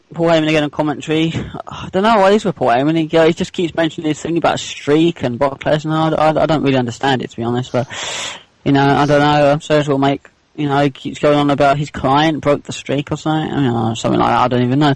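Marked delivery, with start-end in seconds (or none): none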